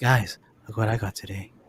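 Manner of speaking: very low, dropped, deep voice. Showing the group an impression of Kyle. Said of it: "let me do my Kyle impression".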